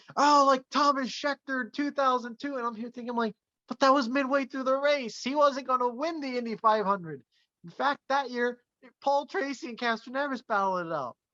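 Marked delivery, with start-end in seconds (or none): 0.2-2.6 play-acted, hyped-up, excited announcer screaming. Act out Marty Reid suddenly screaming during an Indy 500 race call, imitating Marty Reid screaming. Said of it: "just starts screaming".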